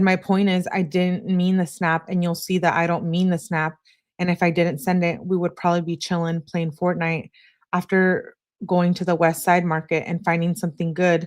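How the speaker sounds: plain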